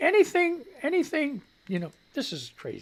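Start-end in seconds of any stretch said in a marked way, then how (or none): 0.0-1.9 excited, high, swooping, worked-up outburst. Complaining about the other side's tactics, voice getting high, excited. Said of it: "My voice is getting high again".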